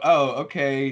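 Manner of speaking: plain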